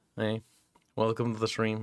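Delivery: bored, uninterested, sounding unwilling to be there. Streamer welcoming viewers to the stream, sounding bored and uninterested. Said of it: "like I have no interest in being here".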